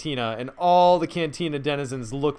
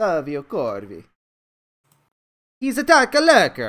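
terrible fake Italian accent, loud and swooping; 2 semitones higher, 5 dB louder than usual. Introducing a new character to the players, in a bad Italian accent. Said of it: "these terrible Italian accents".

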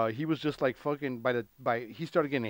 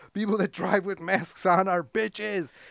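high-pitched, berating yelling rant; 7 semitones higher, 3 dB louder than usual. Retelling how Joe Rogan screamed at people who all looked at each other, imitating Joe Rogan yelling. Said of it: "Joe Rogan's like yelling at him".

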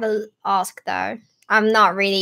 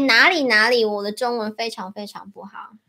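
ordinary talk

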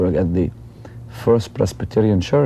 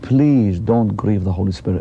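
acted anguished pleading, as if in agony. Retelling what a woman said as she pointed at a crowd, acting out an anguished plea. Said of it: "almost like she was in agony".

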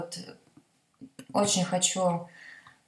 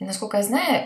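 ordinary talk, nothing marked

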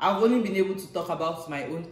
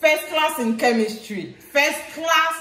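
very high, thrilled, excited screaming; 10 semitones higher, 7 dB louder than usual. Reacting excitedly as another speaker tells their story, screaming. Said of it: "You're screaming".

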